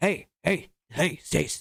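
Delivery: very slow, glacial, drawn-out delivery with groove. Imitating Tim pointing out Alaska spots to Stacy: imitating Tim. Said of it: "I have a really great impression".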